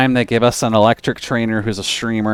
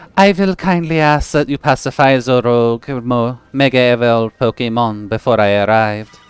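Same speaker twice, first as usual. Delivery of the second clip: fake, obnoxious, deliberately grating French accent. Reading a game character's lines aloud in a put-on French accent. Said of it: "Is that your French accent?".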